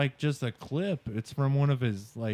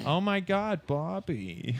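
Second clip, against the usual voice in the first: very slow, drawn-out, high, swooping sing-song cartoon wife voice; 6 semitones higher than usual. Joking about Bob's Burgers voices: Linda from Bob's Burgers voice. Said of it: "now I hear it".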